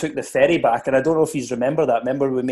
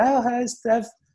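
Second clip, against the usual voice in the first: put-on female voice, much higher and slower; 10 semitones higher than usual. Retelling how a man answered a woman's phone call: put-on lassie's voice. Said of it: "he puts on a lassie's voice".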